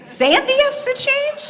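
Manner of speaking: high, loud outraged disbelief.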